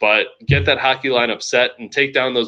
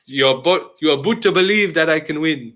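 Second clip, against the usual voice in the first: terrible, unconvincing put-on Canadian accent; 4 semitones higher than usual. A show host closing out the week's episode, terrible canadian accent. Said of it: "that was a terrible Canadian accent".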